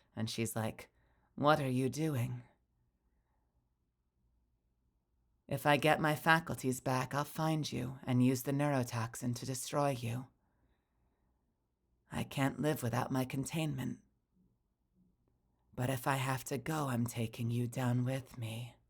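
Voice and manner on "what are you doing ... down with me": mock-menacing put-on voice, soft and quieter. Gushing about a favorite voice and quoting her, imitating a soft menacing voice. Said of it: "really soft and menacing".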